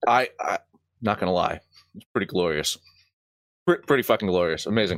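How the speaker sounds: muffled words, talking through a mouthful of food. Answering how great the win felt, talking with mouth full. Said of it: "still got a mouthful of pickle".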